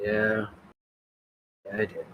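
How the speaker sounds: unenthusiastic, not the least bit excited. Answering in character that she married him: not excited. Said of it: "don't sound so excited".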